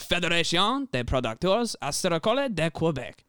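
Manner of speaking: high, bad French accent. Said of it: "my absolute dog shit fr-, like, French accent".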